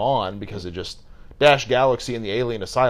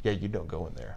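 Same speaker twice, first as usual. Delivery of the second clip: very soft, hushed, menacing, threatening delivery; 3 semitones lower, 10 dB quieter than usual. Describing a host guarding a locked room, the speaker acts him out, retelling a menacing warning. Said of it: "but he says it like menacingly".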